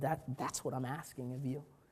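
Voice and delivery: gentle, soft, hushed half-whisper. Retelling what God said at a breaking point: imitating God's soft half-whisper. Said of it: "in his soft whisper".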